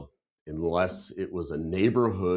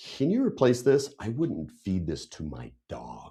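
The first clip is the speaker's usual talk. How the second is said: put-on annoyed, angry complaining tone. Retelling what was said to a waiter: imitating own angry complaint. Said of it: "'cause I was pissed by this time".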